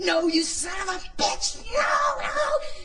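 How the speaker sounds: very high screaming, climbing and drawn out. Retelling finally saying no to the fire, reenacting screaming no. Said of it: "Starts screaming, screaming, screaming".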